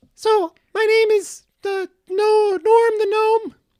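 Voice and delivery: high-pitched voice. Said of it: "the last meeting of the High Voice".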